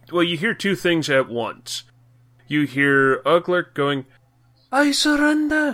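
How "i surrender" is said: very high, squeaky, bad English accent. Narrating a game scene, a foe drops his rifle and surrenders: Uglerk in bad English accent. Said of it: "That was my worst English accent ever. Somehow it went Scottish".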